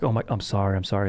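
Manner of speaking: ordinary talk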